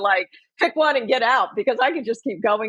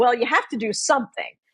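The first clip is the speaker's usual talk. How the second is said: snippy, snarky delivery. Retelling what a coworker said in a meeting: imitating a snarky remark. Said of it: "in a rather snarky way said".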